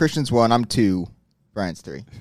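glum, deflated, dejected, downcast delivery. Speaker answering the others' question about the order, dejected. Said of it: "Why do you say it like dejected?".

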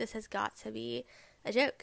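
ordinary talk

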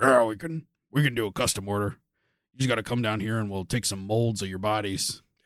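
low, soft, gruff voice.

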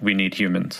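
plain

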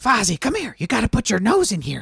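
very high, loud, swooping puppet voice. Trading puppet impressions, the speaker tries out a Gonzo voice. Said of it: "I can do a better Gonzo".

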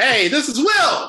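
very high, loud, eager and excited. Hosts introduce themselves as if reading lines from a script, excited.

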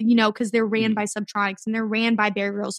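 ordinary delivery

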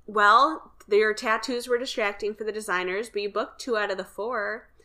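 normal talking voice

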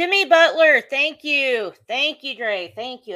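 loud, high, excited, relieved outburst.

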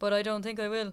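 dull, lifeless, completely level monotone drone. Imitating Colin Farrell's delivery of a line in a film: imitating Colin Farrell's monotone. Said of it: "just really monotone".

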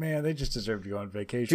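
ordinary delivery

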